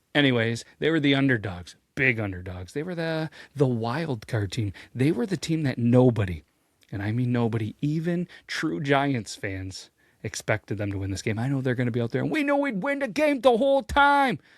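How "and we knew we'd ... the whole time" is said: bad, clumsy New York accent, very high-pitched. Telling the story of the underdog Giants, quoting their players, in a bad New York City accent. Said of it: "that was my New York City accent, or my Jersey accent. It's terrible".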